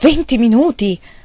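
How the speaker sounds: loud, terrified voice, words repeated. The mother echoes what she was just told, terror in her voice. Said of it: "con un tono di voce che rivelava il suo terrore".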